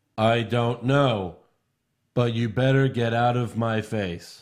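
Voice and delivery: put-on stiff, robotic security guard voice. Retelling a wrestling segment, acting out a security guard like a robot. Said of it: "It's like they fucking programmed a robot".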